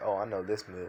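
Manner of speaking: usual speaking voice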